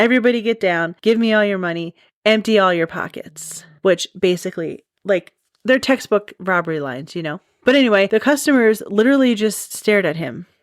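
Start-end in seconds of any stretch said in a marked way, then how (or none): none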